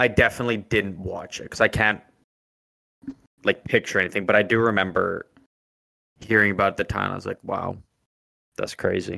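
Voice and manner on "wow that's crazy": put-on deadpan, flat and unenthused. Retelling own past reaction to hearing about a fight: retelling a flat reaction.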